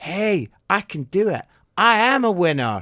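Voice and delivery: put-on slight American accent. Acting out a pep talk to oneself, in a slight american accent. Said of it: "in a slightly American accent".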